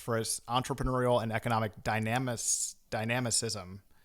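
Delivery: ordinary delivery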